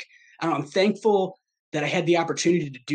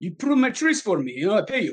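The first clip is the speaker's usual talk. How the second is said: terrible put-on Ukrainian accent; 3 semitones higher than usual. Retelling what a Ukrainian man who came up once said, in a bad Ukrainian accent. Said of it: "That's a terrible accent".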